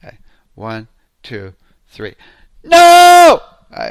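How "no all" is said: very loud, shrill, high, stretched-out yell. Putting a hand out to say no, really loud shout. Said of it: "I'm going to get really loud here".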